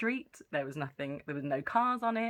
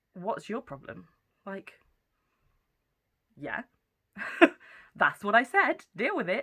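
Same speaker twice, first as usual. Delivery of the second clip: mock deadpan, dead serious, raised and loud; 5 semitones higher, 5 dB louder than usual. Retelling how a man stared back at you, mock deadpan serious. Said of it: "he's looking back at me so deadpan serious".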